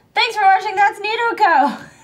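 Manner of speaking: bad put-on toy voice, high pitched. A host makes a toy say the channel sign-off: terrible put-on toy voice. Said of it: "This is a terrible voice".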